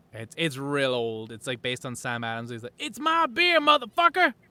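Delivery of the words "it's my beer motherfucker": very high, loud shouted celebrity-style voice. Retelling a comedy skit's line: shouting Samuel L. Jackson impression. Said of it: "people just shout".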